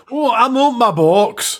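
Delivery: Glaswegian accent. Saying a distribution's name as another speaker suggested, in a Glasgow accent. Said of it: "do that with your best Glasgow accent".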